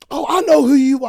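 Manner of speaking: very loud, high, sudden shout. Retelling a girl jumping out as the speaker walked past, retelling a loud shout.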